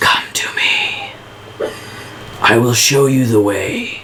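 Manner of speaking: soft, beckoning whispered call. Narrating a story to the listeners, the speaker voices a calling voice: whisper. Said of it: "you hear the voice again whisper".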